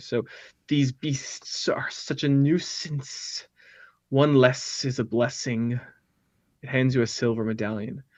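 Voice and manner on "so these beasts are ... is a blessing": whispered, hissed, whispery ghoul creature voice. A game master voices a ghoul thanking the players, hissing ghoul voice. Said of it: "as it hisses".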